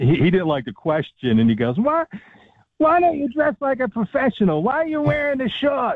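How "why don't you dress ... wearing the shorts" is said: put-on Brooklyn accent, pitched very high, in a sudden outburst. Retelling a man's reply to a question he didn't like, in a Brooklyn accent. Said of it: "Got the Brooklyn accent".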